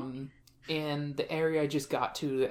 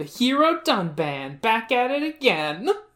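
loud, unhurried heroic tone. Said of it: "Sharla will go".

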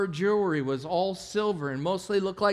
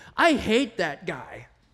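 put-on loud, blunt, bold little-kid voice; 3 dB louder than usual. A parent retells what their four-year-old son said beside a man in Walmart, big bold four-year-old voice. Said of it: "with his big, bold four-year-old voice".

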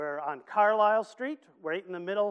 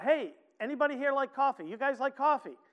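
light, mild called-out voice, pitched up; 6 semitones higher than usual. Retelling calling out to men still coming toward him: retelling a shout. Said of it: "I shouted out".

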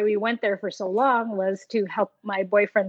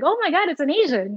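put-on high, astonished outburst of disbelief; 7 semitones higher than usual. Retelling how a kid by the road reacted: imitating an astonished kid. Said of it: "more like in astonishment".

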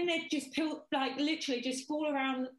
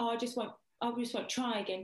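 plain

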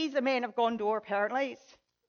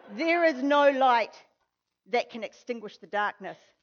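plain

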